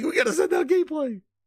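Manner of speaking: crying out very high, in a panic. Imitating a panicking Phil Spencer about sending out gameplay. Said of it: "He's panicking".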